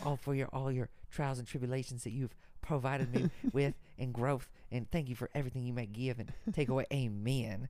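put-on Southern US accent, sermon-style delivery. Retelling a thankful prayer-like speech ending in amen, sounding like a Southern Baptist. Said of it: "I sound like a fucking Southern Baptist".

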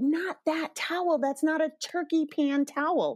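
put-on high-pitched screamed scolding. Retelling the sister-in-law stopping the brother drying the turkey pan: imitating a scream. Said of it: "my sister-in-law screamed".

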